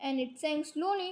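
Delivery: ordinary delivery, nothing marked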